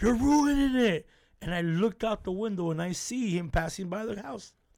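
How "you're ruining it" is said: high, loud, scolding yell. Retelling how a cousin yelled with closed eyes: imitating Martin yelling. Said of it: "was yelling at me".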